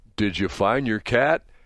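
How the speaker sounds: put-on drugged, dazed, stupor voice. Retelling what a man said to her after he was hit by a car, in a mock drug-stupor voice. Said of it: "in like this drug stupor voice".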